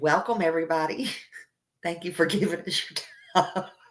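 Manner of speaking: talking through laughter. A chat moderator repeats a message they once typed, laughing while talking. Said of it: "I can't do it without laughing".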